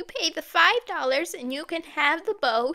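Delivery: put-on squeaky, high, old grandmother voice. Reading a story, voice the grandmother's offer of the boat: squeaky grandmother voice. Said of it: "the grandmother said in a squeaky voice".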